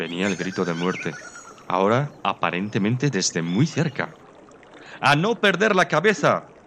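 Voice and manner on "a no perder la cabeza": shrill, high-pitched yell, voice cracking and breaking. Reading a pheasant as a death cry draws near: shouting, voice cracking. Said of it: "gritó el Faisán".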